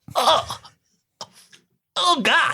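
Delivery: high, tearful crying, breaking into tears. Reacting right after tasting the food from the jar, crying. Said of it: "Riley's crying".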